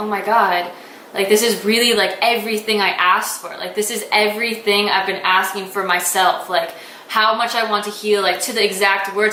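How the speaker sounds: ordinary delivery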